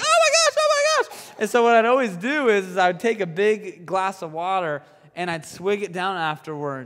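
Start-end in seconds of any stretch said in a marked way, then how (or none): 0.0-1.3 frantic panicked voice. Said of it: "I'd just be like".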